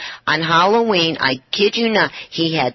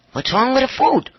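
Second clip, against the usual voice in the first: play-acted alarmed, panicking, high blurt; 6 semitones higher than usual. Retelling a dinner where he stopped eating after a few bites: imitating own panic. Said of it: "I'm panicking".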